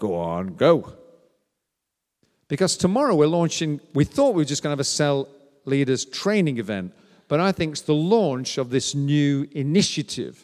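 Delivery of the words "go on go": very deep, low voice. Acting out a second inner voice urging someone on, very quiet. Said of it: "the other voice is very quietly going".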